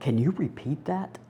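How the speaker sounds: faint, very soft, hushed voice. Retelling a woman's reply on the phone after a long silence: retelling a very soft voice. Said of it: "this very soft, soft voice came back and said".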